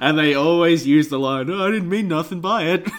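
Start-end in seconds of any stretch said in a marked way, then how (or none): 1.5-2.9 grandfather voice, pitched up. Speaker demonstrates the line every story character uses, imitating grandfather's voice. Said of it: "doing my grandfather's voice".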